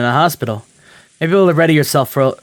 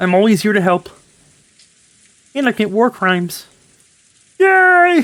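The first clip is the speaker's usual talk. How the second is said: put-on frog character voice; 7 semitones higher than usual. Answering someone who has just thanked you as Kermit, do a Kermit voice. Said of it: "Thank you, Kermit".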